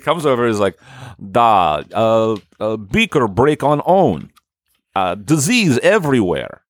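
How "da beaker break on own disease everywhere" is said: very slow, drawn-out put-on Russian accent. Acting out a visitor finding a broken beaker: imitating Boris Yeltsin. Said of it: "Isn't he very Russian?".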